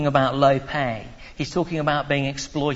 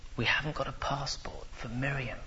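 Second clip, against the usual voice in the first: very quiet, hushed, low, stunned-sounding voice; 11 dB quieter than usual. Quoting what she said to you, in a very quiet voice. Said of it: "she said in a very quiet voice".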